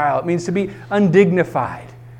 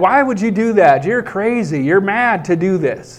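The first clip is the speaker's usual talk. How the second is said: usual speaking voice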